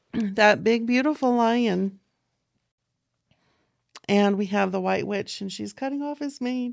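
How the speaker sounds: teary-eyed, voice welling up. Describing the lion scene from a movie she loved as a child, getting teary. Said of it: "now I'm going to get teary".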